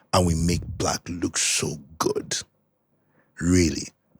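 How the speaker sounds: affected, special put-on voice. A podcast host praises the industry while the co-host objects: put-on voice. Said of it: "why are you using that voice?".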